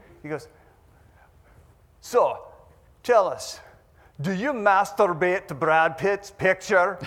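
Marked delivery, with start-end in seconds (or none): 2.0-7.0 put-on thick, heavily laid-on Scottish accent, raised voice. Retelling a man's question to him in front of hundreds: heavy scottish accent. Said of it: "He had this heavy Scottish accent".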